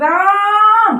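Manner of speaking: high voice with the vowel held long. Hindi lesson on pluta vowels, calling someone: drawn-out call of Ram. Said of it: "इस तरह से जब हम किसी को लंबे समय तक पुकारेंगे".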